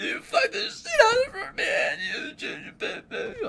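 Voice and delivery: tearful, sobbing, very high crying voice. Retelling her breakdown over him hooking up: imitating someone crying. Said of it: "how her girls cry".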